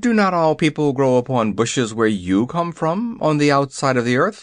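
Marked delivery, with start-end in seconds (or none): none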